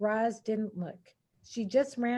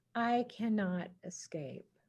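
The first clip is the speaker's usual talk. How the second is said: softer, hushed robot voice; 2 semitones lower, 8 dB quieter than usual. The robot Roz, after urging Bright Bill to fly to safety, in a softer voice. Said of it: "And then in a softer voice".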